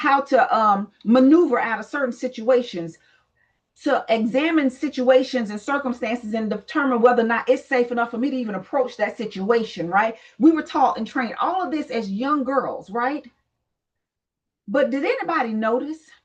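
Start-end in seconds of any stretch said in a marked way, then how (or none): none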